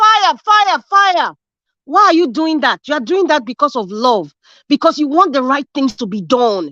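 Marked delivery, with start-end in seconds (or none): 0.0-1.3 very high, alarmed screaming. Telling listeners how they would warn their street of fire, screaming out. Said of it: "You will scream out and say".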